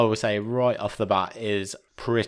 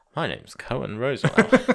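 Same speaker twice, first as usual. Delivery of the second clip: swooping, spy-hero style announcing delivery. Imitating a film character introducing himself like James Bond. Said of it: "He thinks he's James Bond".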